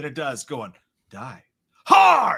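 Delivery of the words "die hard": shrill, raw, screeching scream, very loud. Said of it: "why are you screaming?".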